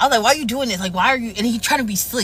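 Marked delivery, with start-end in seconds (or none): 0.2-1.3 play-acted, confrontational, demanding arguing tone. Retelling an argument while shopping: imitating her own arguing. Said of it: "We were arguing".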